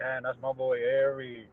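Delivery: hushed, low mutter under the breath. Retelling a past reaction to an opposing player: imitating muttering under breath. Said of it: "Under my breath, I'd be like".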